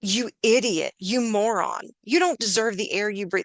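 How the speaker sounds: acted yelling, shouting insults. Describing harsh self-talk, the speaker gives an example, mock-yelling at a child. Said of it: "you yelled at them".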